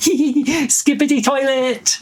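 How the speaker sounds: very high, slow, giggly voice. Game storyteller voices the giggling toilet leaping out, in a high-pitched giggling toilet voice. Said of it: "in a high-pitched voice".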